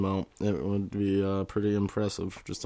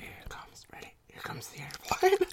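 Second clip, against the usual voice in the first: fake asmr whisper, higher and quieter; 4 dB quieter than usual. Joking through an ASMR bit into the microphone: put-on ASMR whisper. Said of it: "a little bit whispery".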